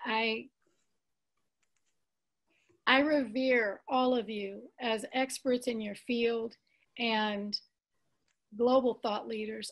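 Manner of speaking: a little tearful, choked-up, deeply moved. Speaking to C J, Fred and Doctor Noah after receiving their precious information, a little teary. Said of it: "I'm getting a little teary here".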